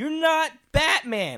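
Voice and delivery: high, very loud, full-throated scream. Speaker recalls watching a show and yelling at the TV, retelling screaming at the TV. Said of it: "And I'm screaming at the TV".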